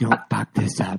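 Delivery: put-on whisper. Retelling a hunting partner's words during a draw on pigs: imitating someone whispering. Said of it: "You're whispering, like".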